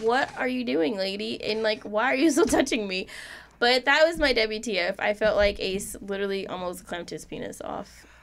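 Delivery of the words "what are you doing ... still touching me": put-on confused, puzzled child voice. Retelling how the son looked at her: voicing the son's confused look. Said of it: "He was just looking at me like".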